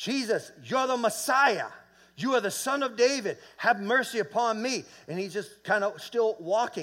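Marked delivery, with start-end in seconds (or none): 0.0-4.8 mock, high, screamed-out calling voice. Retelling how a blind beggar cried out to jesus: imitating someone screaming out. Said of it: "blind Bartimaeus is screaming out".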